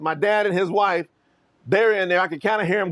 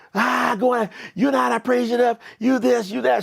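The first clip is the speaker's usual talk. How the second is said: put-on scream, higher pitch; 5 semitones higher than usual. Retelling a fight at home: imitating stepmother screaming. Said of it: "she's screaming".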